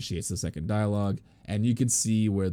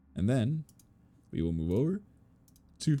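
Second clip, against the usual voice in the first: halting, breaking-up words spoken mid-yawn; 4 semitones higher than usual. Explaining a setup step by step, the speaker talks while yawning. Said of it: "sorry, I'm yawning".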